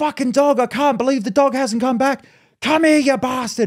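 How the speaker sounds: play-acted yelling, pitched very high. Retelling how a dog owner shouted after her runaway dog, retelling a yell. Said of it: "she's yelling".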